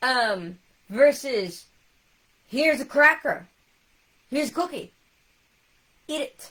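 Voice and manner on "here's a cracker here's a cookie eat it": aggressive, in-your-face, loud, pushy, forceful. Speaker acts out someone pushing crackers and cookies on a person, mock-aggressive offering. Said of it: "dang, calm down. I'm scared now".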